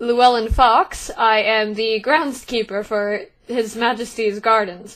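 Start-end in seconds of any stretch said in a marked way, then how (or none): none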